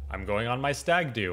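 ordinary delivery

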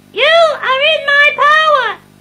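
high-pitched voice. Following hypnosis instructions to repeat a phrase after being told higher, very high voice. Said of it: "no, higher".

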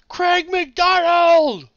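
very high, shrill, very loud shout. Reading out a listener's name written in all caps, shouting a listener's name. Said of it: "I just want to shout them".

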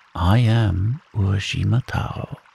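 usual speaking voice

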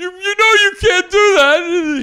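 acted yell holding in laughter. Retelling how a man on a show yelled, imitating yelling while holding in laughter. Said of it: "He's like trying not to laugh".

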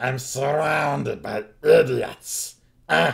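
mean, shrill, rough, very high, very loud kobold outburst. Voicing a mean kobold during a tabletop role-playing game; mean kobold voice. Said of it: "the mean kobold, ... And it almost sounds like an elvish dialect or accent is coming out of this mean kobold".

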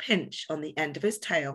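ordinary delivery

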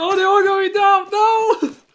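mock panicky, crying-out voice. Asking friends if they heard your comment, replaying it in mock-panic voice. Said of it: "my panic voice at the end".

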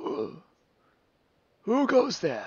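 put-on very high, very loud, swooping old man voice. Voicing an old man who calls out to strangers: old man character voice. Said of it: "an old man ... turns and looks at you and goes".

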